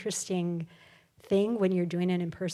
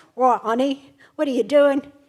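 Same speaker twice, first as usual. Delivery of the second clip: put-on loud, high-pitched, belted-out Cockney accent; 6 semitones higher, 10 dB louder than usual. Unable to do an English accent generally, show the one you can: Uncle Andy's Cockney accent. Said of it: "I can do my Uncle Andy's accent because he's like Cockney".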